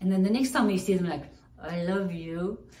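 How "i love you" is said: put-on forced gritted-teeth tone, much slower. Describing greeting people you struggle to love, acting out gritted teeth. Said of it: "through gritted teeth".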